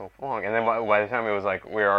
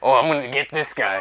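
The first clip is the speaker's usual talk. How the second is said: mock old-timey man voice, higher and louder; 4 semitones higher, 4 dB louder than usual. Retelling pumping himself up in the street: imitating old-timey men. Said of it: "like old timey men".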